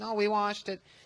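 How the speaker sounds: high, soft put-on Mexican accent.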